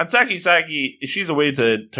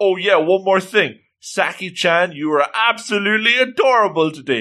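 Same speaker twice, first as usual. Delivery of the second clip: high, eager shouted call; 5 semitones higher than usual. Retelling a guy calling out to saki-chan as she leaves, retelling a shout. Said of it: "As he shouts".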